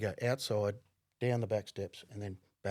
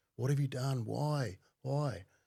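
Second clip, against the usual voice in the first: mock distraught, tearful, anguished crying voice; 4 semitones higher than usual. Recalling a moment that took their breath away, retelling screaming and crying. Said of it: "I just started yelling, screaming, crying".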